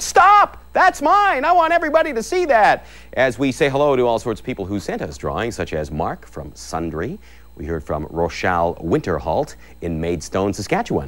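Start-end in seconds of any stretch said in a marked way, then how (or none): 0.0-2.9 high, loud, excited yell. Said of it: "just yell out".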